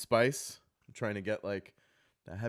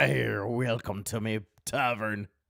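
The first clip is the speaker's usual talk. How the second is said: slow, put-on pirate dwarf voice. Playing a dwarven bartender greeting guests: pirate dwarven bartender voice. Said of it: "A pirate, a pirate dwarven bartender".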